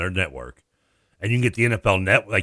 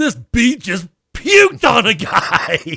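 very high-pitched, loud, sudden blurted shout; 8 dB louder than usual. Retelling blurting something out in a movie theater, retelling a loud shout. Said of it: "as loud as I could say it".

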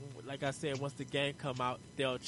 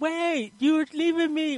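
put-on yell, higher and louder; 14 dB louder than usual. Retelling a line from a game trailer: imitating someone yelling. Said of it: "the dude who was yelling".

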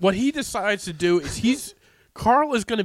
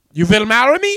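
attempted German accent, higher and louder; 5 semitones higher, 9 dB louder than usual. Retelling a man repeatedly proposing to Helen, trying a German accent. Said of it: "I'm trying to do a German accent".

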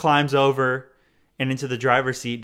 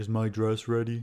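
spot-on imitation of a girl's voice; 3 semitones lower, 7 dB quieter than usual. Recounting a TV scene, neighbor girl's voice impression. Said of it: "that was like a perfect recreation of the voice right there".

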